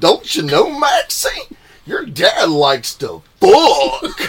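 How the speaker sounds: very high, loud, shrill, booming, swooping cartoon dog voice. Joking about tripping, now sounding like Goofy: Goofy voice. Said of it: "Now I'm sounding like Goofy".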